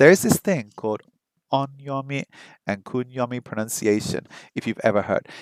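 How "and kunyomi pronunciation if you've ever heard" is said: normal talking voice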